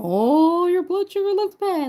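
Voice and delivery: very high, tut-tutting, scolding doctor voice. Imagining a doctor wagging his finger at her: imitating a scolding doctor. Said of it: "wagging his finger at me going".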